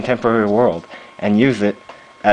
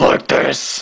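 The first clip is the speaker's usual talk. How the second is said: put-on harsh voice, much higher; 4 semitones higher than usual. Showing how he talks in his movies, in Batman's harsh, mysterious voice. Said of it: "I make my voice all harsh and mysterious".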